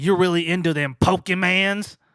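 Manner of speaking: mock raspy, gravelly country kid voice with chewing mouth. Retelling a remark from a boy also waiting to see the principal, imitating a tobacco-chewing voice. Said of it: "your voice sounds like you've been chewing tobacco".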